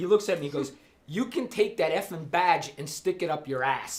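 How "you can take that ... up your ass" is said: ordinary talk, nothing marked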